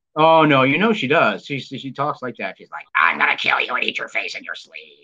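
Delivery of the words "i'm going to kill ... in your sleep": very low, rumbling demon voice without growl. Speaker, urged to make the demon voice, imitates how Molly talks, in a demon voice. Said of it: "make the demon voice".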